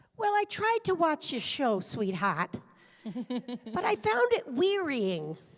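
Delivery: put-on heavy, thick Boston accent. Retelling what a family member said about the speaker's show, in a thick boston accent. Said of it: "she had a thick Boston accent".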